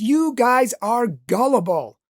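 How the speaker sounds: loud, booming, drawn-out yell. Retelling bursting through the door on religious people, the speaker re-enacts a loud yell. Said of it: "I yelled out in a loud voice".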